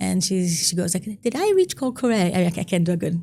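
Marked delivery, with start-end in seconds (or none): 1.2-2.3 bad put-on strong British accent, pitched up. Retelling a late-night phone call from a woman: imitating a strong British accent. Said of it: "a lady with a very strong British accent".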